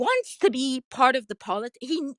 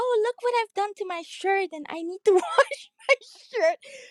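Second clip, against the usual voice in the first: put-on high, whiny, complaining little baby voice; 8 semitones higher than usual. Retelling how a film character walks in after slipping in mud: imitating a whiny baby voice.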